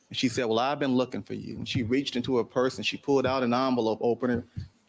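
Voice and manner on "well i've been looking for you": usual speaking voice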